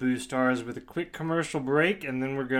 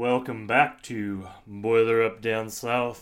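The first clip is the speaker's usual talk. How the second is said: put-on broadcaster, radio announcer voice; 2 semitones lower than usual. A podcast host welcomes listeners back, in a best radio announcer voice. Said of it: "in my best radio voice".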